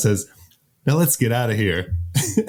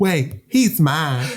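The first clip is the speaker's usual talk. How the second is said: put-on genteel Southern belle accent, pitched up; 5 semitones higher than usual. Repeating a character's line while retelling the story, Samantha's Southern belle voice. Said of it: "Why is she like a Southern belle".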